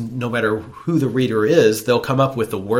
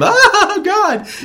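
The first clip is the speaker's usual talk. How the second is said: higher, louder imitated scream; 8 dB louder than usual. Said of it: "That's how they scream".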